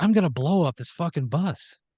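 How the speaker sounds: jittery, on-the-brink, edgy delivery, pitched slightly up. Retelling a kid's threat on a bus: Dennis Hopper impression, on edge. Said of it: "He's very Dennis Hoppery. He's, like, very on edge".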